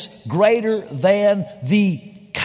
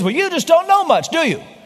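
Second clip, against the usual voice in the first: exasperated, frustrated, pitched-up tone; 9 semitones higher than usual. Retelling a joke's punchline exchange: imitating a frustrated businessman. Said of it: "And frustrated".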